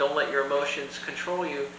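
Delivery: ordinary talk, nothing marked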